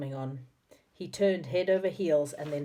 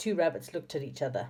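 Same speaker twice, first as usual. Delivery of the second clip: usual speaking voice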